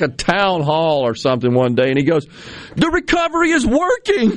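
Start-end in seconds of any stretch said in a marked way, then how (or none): 2.7-4.4 very high, insistent screaming. Retelling what he said at a town hall, mock-screaming at the people. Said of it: "He's just screaming at the people like".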